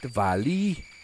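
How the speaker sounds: put-on, attempted Welsh accent. Saying 'the valley', which feels like it should be Welsh: attempted Welsh accent. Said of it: "that was my closest Welsh accent".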